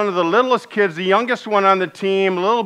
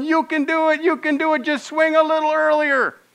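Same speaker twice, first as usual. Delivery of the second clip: put-on, high-pitched, encouraging cheering yell; 8 semitones higher than usual. Retelling a cheer from the stands at a Little League game: imitating someone yelling. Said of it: "John's just yelling".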